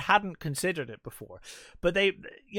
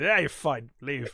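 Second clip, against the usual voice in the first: mock rude, curt, dismissive voice; 2 semitones lower than usual. Remembering nurses from childhood: imitating a rude, dismissive nurse. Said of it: "were just fucking rude and just like".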